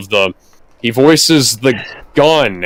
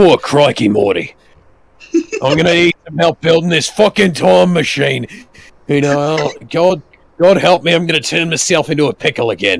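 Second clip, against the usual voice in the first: put-on Australian cartoon voice, accent pitched up high; 5 semitones higher than usual. Imitating a game character's voice for others: Australian Rick voice. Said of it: "The Rick voice is so funny".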